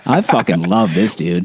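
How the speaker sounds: ordinary talk, nothing marked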